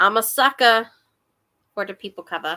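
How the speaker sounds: New York accent slipping out. Talking about a favourite book cover: New York accent. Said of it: "that's my New York accent coming out".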